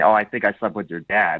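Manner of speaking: imitated whispering. Mocking a date's habits, imitating someone whispering. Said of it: "find out that you're whispering".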